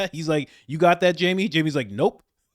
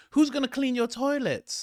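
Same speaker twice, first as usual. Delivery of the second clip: put-on British accent, higher and quieter; 6 semitones higher, 6 dB quieter than usual. Quoting a tv panelist's remark: imitating a british accent. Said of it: "With a nice British accent".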